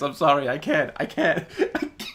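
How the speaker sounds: very loud, high, breaking up with laughter. Apologizing for a laughing fit on the show: laughing while talking. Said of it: "I can't keep a straight face".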